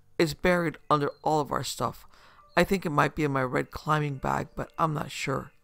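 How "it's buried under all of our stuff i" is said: ordinary delivery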